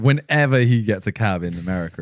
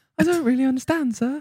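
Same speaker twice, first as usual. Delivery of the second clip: put-on high, childlike little-boy voice. Mimicking the other speaker's answer: imitating a little boy voice. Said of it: "Why do you sound like a little boy?".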